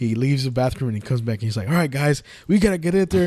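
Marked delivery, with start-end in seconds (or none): 1.7-3.3 clumsy, lame coach voice, pitched up. Retelling a movie scene where an actor rallies a team: imitating Zach Galifianakis acting a coach. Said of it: "that's his best, uh, acting like a coach".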